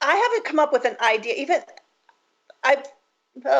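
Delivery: halting, stumbling, stammering stutter. Panelist answering how their business supports clients and community during this time, stuttering. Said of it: "sorry that I'm stuttering so much".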